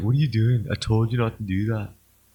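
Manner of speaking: put-on cartoon duck voice. Showing others who a reader sounds like: Ducks from Courage the Cowardly Dog voice. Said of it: "this is who Tetsuya sounds like. He's like".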